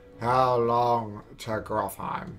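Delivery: very slow, low, flat, half-awake sleepy drone. Redoing the character's line, picturing students on a Monday morning: Ludin as a sleepy Monday-morning student. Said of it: "that's his voice right now".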